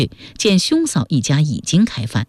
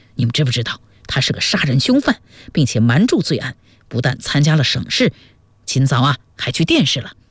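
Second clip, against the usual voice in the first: plain reading voice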